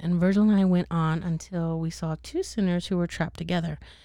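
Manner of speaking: ordinary talk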